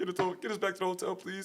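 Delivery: high, crying, tearful, desperate voice. Recalling leaving a club in Beirut, the speaker re-enacts crying. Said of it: "I was crying like".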